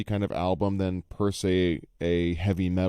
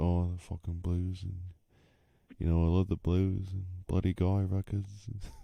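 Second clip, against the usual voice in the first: soft, hushed low talker, barely raised voice; 7 dB quieter than usual. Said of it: "low talker".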